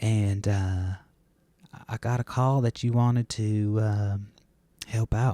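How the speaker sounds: very slow Southern preacher cadence. Imitating Pastor Dave calling about helping out, in his pastor cadence. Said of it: "why do you talk like that?".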